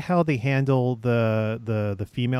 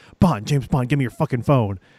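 put-on, annoyed spy voice; 3 dB louder than usual. Retelling a film scene, imitating Dalton's Bond: annoyed Dalton-as-Bond impression. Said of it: "he plays Bond like he's annoyed".

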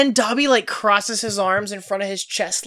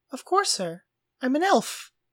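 light, pitched-up, unbothered, casually obvious matter-of-fact tone; 5 semitones higher, 5 dB quieter than usual. Retelling what Dobby says when asked to get them out: imitating Dobby, nonplussed. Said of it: "he's just like".

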